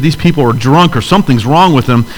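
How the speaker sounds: plain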